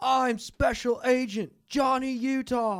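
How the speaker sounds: stretched out, high and loud. Doing bad impressions for friends: Keanu Reeves impression. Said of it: "Like Keanu Reeves in Point Break".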